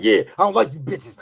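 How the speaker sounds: said with great force, loud and rough. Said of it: "You said that with a lot of force".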